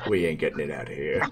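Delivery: deep dwarf voice. Storyteller voicing a character who looks at the ship, deep dwarf voice. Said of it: "the dwarf with the deep voice".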